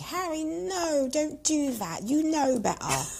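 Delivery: put-on English accent, pitched way up. Retelling a past thought addressed to [name]: put-on English accent. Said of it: "Quite a good English accent there from [name]".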